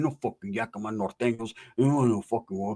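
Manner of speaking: mock mumbling under the breath. Retelling what another man muttered, imitating mumbling under the breath. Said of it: "I can hear him mumbling under the breath".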